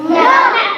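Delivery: loud, high-pitched shouted word.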